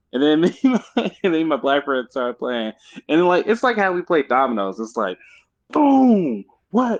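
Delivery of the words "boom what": high, loud animated outburst. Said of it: "we get all a little more animated with it".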